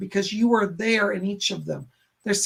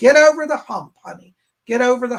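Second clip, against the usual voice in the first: put-on thick, loud Southern accent; 4 semitones higher, 8 dB louder than usual. Passing on Yolanda's message to a listener in Yolanda's big southern accent. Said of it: "she got a big southern accent".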